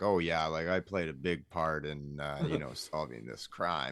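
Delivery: put-on dim-witted voice, earnest, all sincerity. Retelling the police chief taking credit for the bust: imitating sincere police chief. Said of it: "saying it with such, like, sincerity".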